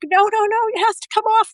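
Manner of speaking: put-on child screaming, pitched way up. Retelling a story about a child's meltdown over clothing, putting on the child's desperate screams for an audience. imitating someone screaming. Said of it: "He screaming at me".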